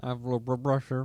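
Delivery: garbled, jumbled mumble as if mouth is stuffed. Mimicking how the other speaker just sounded, imitating garbled mouth speech. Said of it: "sounded like you had something wrong with your mouth".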